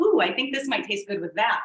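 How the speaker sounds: ordinary talk, nothing marked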